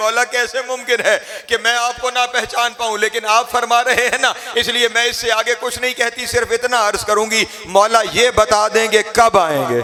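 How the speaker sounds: anguished, pleading tone, high pitched and loud.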